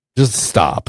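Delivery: livid, angry, scolding voice. Retelling confronting a son who lied: retelling a livid scolding. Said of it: "I'm livid".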